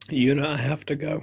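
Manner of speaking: cracking, breaking voice. Speaking to a companion, voice cracking. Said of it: "your voice cracked when you said it".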